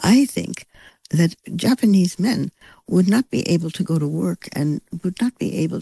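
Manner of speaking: courteous, hesitant, halting careful English, weighing each word. Retelling what a conference speaker said: imitating quiet polite halting speech. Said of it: "very, very quietly and very politely".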